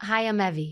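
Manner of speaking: genuine deepest, truest natural speaking tone. The speaker demonstrates how a woman finds her genuine deepest tone. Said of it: "genuine, deepest tone".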